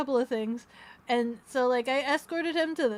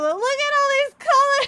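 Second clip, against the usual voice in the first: mock thrilled screaming, very high pitched; 11 dB louder than usual. Recounting screaming at him from outside, retelling excited screaming. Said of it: "I'm just screaming at him".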